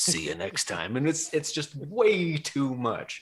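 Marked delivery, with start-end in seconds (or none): 0.0-1.0 very low, throwaway mumble under the breath. Criticizing movie one-liners, acting out the guy's closing line, muttered under breath. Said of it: "he kind of mutters something under his breath".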